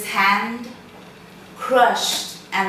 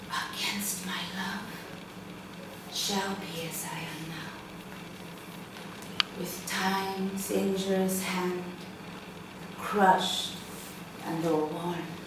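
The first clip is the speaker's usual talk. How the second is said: soft, quiet whisper to oneself. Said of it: "could you just whisper it, do the whispering exercise".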